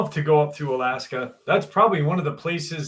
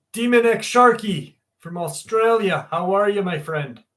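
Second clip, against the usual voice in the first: fake Irish accent, pitched up; 5 semitones higher than usual. Greeting a person from Australia, in a put-on Irish accent. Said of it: "Why am I talking in a fucking Irish accent".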